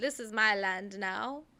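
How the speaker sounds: put-on Jamaican-sounding accent, slow. Imitating a settler claiming land: Jamaican-sounding accent. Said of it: "That was a very Jamaican sounding accent".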